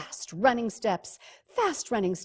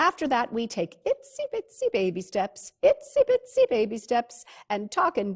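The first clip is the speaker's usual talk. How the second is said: plain reading voice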